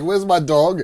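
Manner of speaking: put-on angry tone. Retelling a mother asking where her lost dog is: imitating an angry mother. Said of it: "she was angry as hell".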